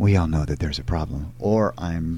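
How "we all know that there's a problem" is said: heartfelt, very earnest, sincere commercial voice-over. A commercial voice actor shows an interviewer his usual styles: very earnest delivery. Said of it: "I'm either very earnest".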